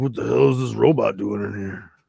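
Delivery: put-on superhero voice with a Southern accent. Voicing a Batman figure while reviewing it, in a Batman voice with Southern accent. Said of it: "my Batman voice just sounded like he's from the South".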